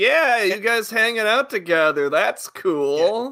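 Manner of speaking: high laid-back surfer drawl, cool and stretched out. Picturing a cartoon creature dubbed with a surfer voice, in a Submarimon surfer-dude voice. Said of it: "Total surfer dude is like".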